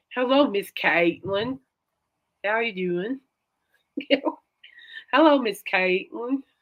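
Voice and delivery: put-on straight-up, full Texan accent. Speaker imitating a teacher who greeted her every morning on campus, in a Texan accent. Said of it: "he had a straight up Texan accent".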